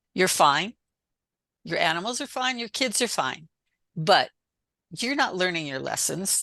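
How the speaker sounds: acted firm, emphatic, forceful voice. Retelling what a voice said to the speaker while driving: imitating a voice speaking strongly. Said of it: "this voice said really strongly".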